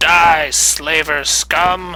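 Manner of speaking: yelling in an acted voice. Voicing a warrior charging a goblin: yelling in character. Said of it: "he yells".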